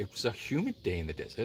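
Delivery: very low, hushed, swooping sing-song Welsh accent. Speaker redoing a line from an old audition, in a welsh accent. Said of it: "I had to do a Welsh accent".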